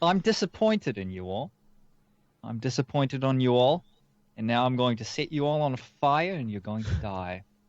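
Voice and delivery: offhand, easygoing, calm, casual menacing tone.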